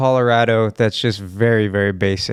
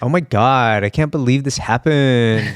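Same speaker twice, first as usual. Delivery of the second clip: put-on Valley Girl drawl, final word stretched long. Describing how the Kardashians sound, in Valley Girl accent, drawn-out last word. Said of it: "the Valley Girl ... the last word always has like a long draw to it".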